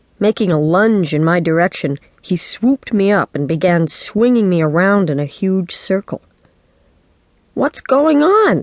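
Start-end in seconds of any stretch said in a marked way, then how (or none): 7.5-8.6 high, squealed, shrieking voice. A kid being swung around in a circle by Dad shrieks. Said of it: "I shrieked".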